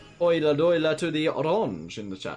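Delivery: bad, terrible put-on Dutch accent. Greeting Dutch viewers in the chat, terrible Dutch accent. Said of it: "That was that was a terrible Dutch accent".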